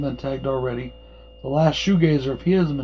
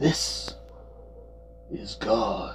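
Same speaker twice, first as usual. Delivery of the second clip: whispered, half-hearted, weak horror-villain voice; 5 semitones lower, 9 dB quieter than usual. Reenacting a favorite line from the film: attempted Freddy Krueger voice. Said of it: "didn't sound anything like Freddy".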